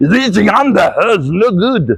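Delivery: put-on German accent. Speaker repeating other coaches' criticism, in a mock German accent. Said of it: "if I have a German accent".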